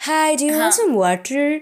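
put-on blend of Indian and American accent. Describing how the speaker's sister talks, quoting her in a mixed Indian-American accent. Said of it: "a middle of the Indian and the American accent".

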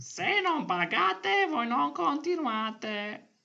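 very high cartoon dinosaur voice. Redoing a quote from a podcast platform, better this time, in a dinosaur voice. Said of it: "che la faccio meglio".

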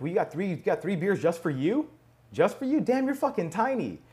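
mock playful teasing tone. Recounting teasing a woman about her three beers, retelling own teasing. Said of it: "I start teasing her being like".

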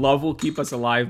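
ordinary talk, nothing marked

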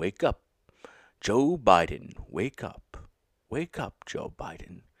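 dark, menacing, ominous, foreboding voice. Describing a video of someone sleeping, doing the video's ominous voice. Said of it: "like, ominous voice going".

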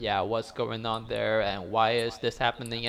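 ordinary talk

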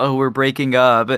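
normal talking voice

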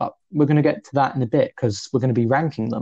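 ordinary talk

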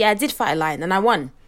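ordinary talk

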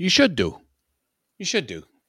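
put-on British accent. Joking about how a british person would say it, fake british accent. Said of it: "If I was British, I'd say".

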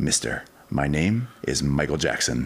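ordinary talk

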